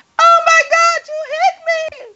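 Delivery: put-on, very high, shrieking scream. Retelling a fight on camera, quoting the woman who got hit screaming. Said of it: "the woman screams".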